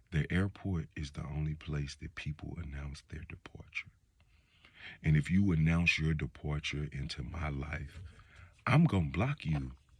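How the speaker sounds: gentle, hushed, very soft, calmed-down delivery. Calming it down to say the point again, a little softer. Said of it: "Let me say it a little bit".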